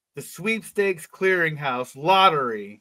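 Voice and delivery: plain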